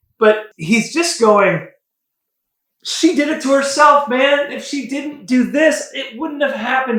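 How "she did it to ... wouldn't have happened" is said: pleading tone. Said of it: "He's pleading".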